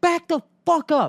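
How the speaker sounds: put-on high, screamed delivery. Telling a story about a man in traffic, imitating him screaming. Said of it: "So he starts screaming at me".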